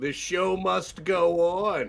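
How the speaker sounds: slow, drawn-out call in character voice. Voicing a character yelling out in Draconic in battle: yelling in character. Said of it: "I yell out in Draconic".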